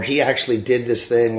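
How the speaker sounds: usual speaking voice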